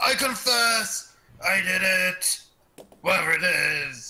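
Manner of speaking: each phrase drawn out as a cry, in character voice. Playing Kushnock facing the captain and armed guards: Kushnock yelling in character. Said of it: "Kushnock yells".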